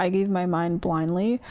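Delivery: plain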